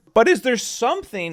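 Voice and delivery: voice cracking, breaking high mid-phrase. Speaker asking listeners about speedrunning events, mid-question, voice cracking. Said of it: "ignore my voice crack right there".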